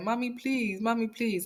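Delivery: high-pitched, sobbing, tearful pleading. Retelling the sister's plea in the hallway: imitating a crying plea. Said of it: "his sister was crying so much".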